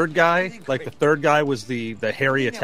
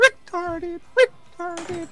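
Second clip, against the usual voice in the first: very high alien creature voice. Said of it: "you could always say it like a, like a Jawa".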